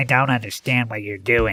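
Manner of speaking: irritating, nasal, mocking voice. Retelling a bully mimicking the narrator: irritating nasal mocking voice. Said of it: "repeated in an irritating nasal voice".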